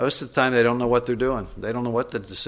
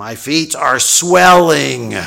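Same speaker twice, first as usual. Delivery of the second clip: very loud, raised voice; 4 semitones higher, 12 dB louder than usual. Retelling what a woman said while looking him in the eye: raised voice. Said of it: "raised her voice and said".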